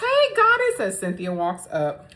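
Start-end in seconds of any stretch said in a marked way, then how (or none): 0.0-0.8 shrill, very high put-on fake yell. Retelling a reality show scene where someone greets another: imitating a fake yell. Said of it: "Shamea fake yells".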